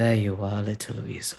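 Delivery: slow-burning, heavily sultry, seductive voice. Narrating a game scene, the speaker voices Electo addressing the player's character: sultry Electo voice. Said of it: "says in that very familiar, sultry Electo voice".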